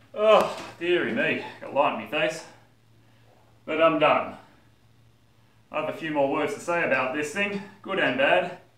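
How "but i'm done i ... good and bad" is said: out of breath, catching breath. After finishing hard work, speaker talks out of breath. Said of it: "Once I catch my breath".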